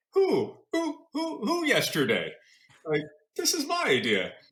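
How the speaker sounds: high-pitched, indignant, disbelieving tone. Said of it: "And I thought to myself, like".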